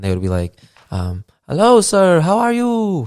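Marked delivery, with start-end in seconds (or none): 1.5-3.1 put-on Spanish-accented voice, very high, drawn out.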